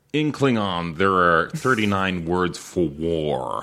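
slow, put-on American accent.

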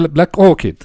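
poor attempt at British accent. Retelling how a pitch was said, poor british accent imitation. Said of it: "mi muy pobre imitación de acento británico".

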